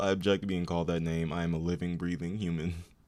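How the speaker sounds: normal talking voice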